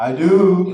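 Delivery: booming, drawn-out do. Repeating a wedding vow after being asked to say it louder: louder. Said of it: "Say it louder".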